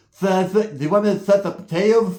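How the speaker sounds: mimicked speech without tongue. Retelling how a tongueless inmate spoke: imitating a man with no tongue. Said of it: "He talk like this".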